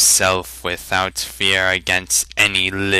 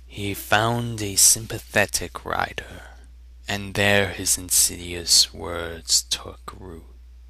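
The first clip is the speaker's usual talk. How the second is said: mesmerizing, spellbinding, hushed whisper; 6 dB quieter than usual. A storyteller continues his tale to his listeners, mesmerizing whisper. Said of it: "His keen eyes inspected their interested faces. His gaze lingered on [name] last of all. / Infinite sadness resonated in his voice. ... The next words came like the mournful toll of a requiem".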